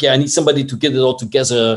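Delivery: bad, put-on French accent. Retelling what a cameraman said to the speaker, in a bad French accent. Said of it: "sorry for my bad French accent".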